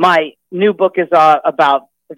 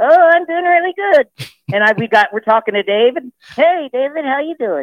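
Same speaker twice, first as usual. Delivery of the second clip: put-on puppet voice, much higher; 10 semitones higher than usual. Joking about ventriloquism on the radio, Alex puppet voice. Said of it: "if I have my partner here, Alex".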